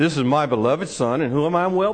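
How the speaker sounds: deep southern voice, dropped low. Quoting God's words at the baptism, trying for a deep southern voice. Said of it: "I'm trying to get a deep southern voice".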